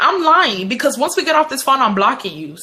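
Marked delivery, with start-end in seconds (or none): none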